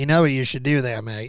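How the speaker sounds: terrible, unconvincing put-on Australian accent. A speaker quotes an Australian listener's advice, terrible Australian accent. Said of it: "Getting my completely terrible Australian accent going".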